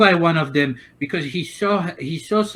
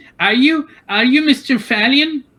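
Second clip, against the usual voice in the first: put-on high, piping little-kid voice; 6 semitones higher, 4 dB louder than usual. Voicing a little kid who asks the short guy his name: voicing a little kid. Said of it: "there's this little kid that comes in and says".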